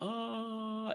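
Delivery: high, faint male scream, as if from far away. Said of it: "like, a male, like, screaming".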